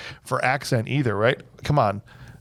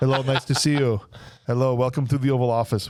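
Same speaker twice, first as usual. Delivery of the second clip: put-on Austrian-accented action-star voice. Acting out a disguised villain greeting visitors as the president: Arnold Schwarzenegger accent. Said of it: "Arnold as Zartan, but keeping his accent".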